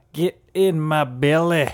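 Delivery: slow, loud, drawn-out put-on Scottish accent. Trying to think of a good accent, in a put-on scottish accent. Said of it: "I'm trying to think of a good Scottish accent. It'd be like".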